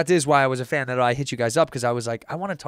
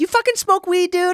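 very high-pitched, mocking, clowning bro voice; 4 dB louder than usual. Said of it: "You got a good impersonation of him".

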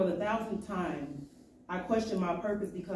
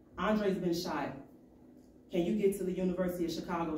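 normal talking voice

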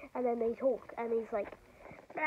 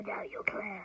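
scary villain voice, much lower, quieter; 6 semitones lower, 5 dB quieter than usual. Retelling a Batman scene, doing the Joker's scary voice. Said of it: "they start manically laughing".

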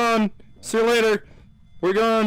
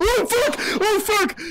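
terrified screaming. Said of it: "I hear you guys screaming".

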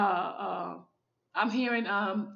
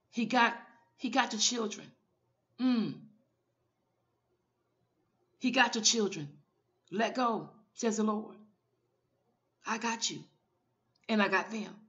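restrained, held-back welling emotion. Praying over a listener worried about their children, holding back emotions. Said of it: "I'm trying to hold my emotions back".

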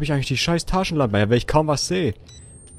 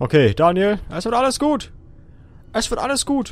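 soft, scared, nervous murmur, rising in pitch; 8 semitones higher, 6 dB quieter than usual. Scared while playing a horror game, talking himself down: nervous self-reassurance. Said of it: "self-calming while scared in horror game".

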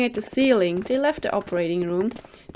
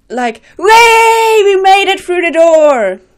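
very loud forced fake excitement, words way stretched; 8 semitones higher, 14 dB louder than usual. Told to sound happier, a character tries on excitement, fake excited. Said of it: "Can't you sound more happy".

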